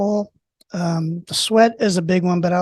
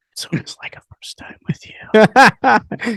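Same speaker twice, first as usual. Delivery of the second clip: slow, teasing whisper. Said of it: "don't whisper".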